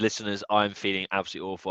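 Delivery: normal talking voice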